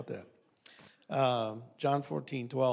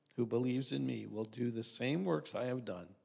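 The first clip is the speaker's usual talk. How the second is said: normal talking voice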